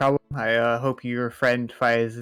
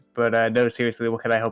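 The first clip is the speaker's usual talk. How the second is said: plain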